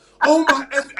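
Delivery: acted yelling at top of lungs. Retelling a teammate screaming on takeoff: imitating a yell at the top of one's lungs. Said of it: "at the top of his lungs".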